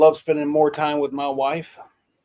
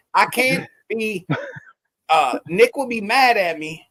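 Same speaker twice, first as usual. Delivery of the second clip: high voice, very slow, dragged-out delivery; 6 semitones higher than usual. Retelling what Wendy said about someone getting Nick: imitating Wendy. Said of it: "Let me say it like Wendy did".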